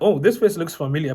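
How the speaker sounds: usual speaking voice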